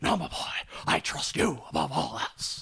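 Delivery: rough, creaky, scraped-out voice. Retelling a movie scene where he answers Jack, do a Jack Palance impression. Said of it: "that's my Jack Palance impression".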